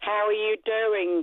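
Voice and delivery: called out loudly, like a shout. Repeating a greeting to the presenter after being asked again, shouting. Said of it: "You don't have to shout".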